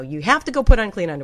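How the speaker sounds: plain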